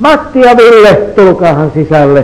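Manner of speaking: high, loud, motherly calling-out voice.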